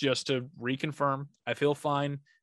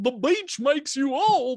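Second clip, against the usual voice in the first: put-on cartoon dog voice, higher and louder; 11 semitones higher, 6 dB louder than usual. Joking about growing old, in a Goofy voice. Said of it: "that's my Goofy".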